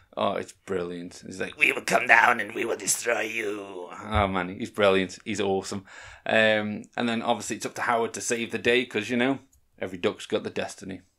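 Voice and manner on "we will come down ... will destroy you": menacing dark overlord voice. Speaker recounting a movie scene, doing Jeff Jones's dark overlord voice. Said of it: "when he's taken over by this dark overlord".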